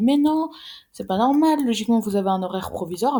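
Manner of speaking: high, loud tone of shocked disbelief. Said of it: "elle était choquée".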